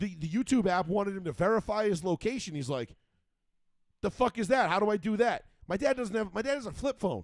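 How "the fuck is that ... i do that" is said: put-on angry ranting voice, higher. Retelling dad reacting to an app asking for location: imitating dad getting angry. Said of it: "getting all pissed off".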